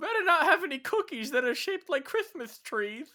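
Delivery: squeaky, very high-pitched cartoonish voice. Riffing on a made-up winter character with another speaker, in a King Candy style voice. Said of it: "this the King Candy style voice".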